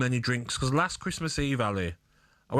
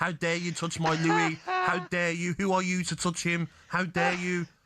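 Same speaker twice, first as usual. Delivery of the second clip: put-on indignant, scandalised, outraged teenage fangirl voice; 6 semitones higher than usual. Reading out social media threats from teenage girls: imitating outraged teenage girl fans. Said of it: "death threats of teenage girls".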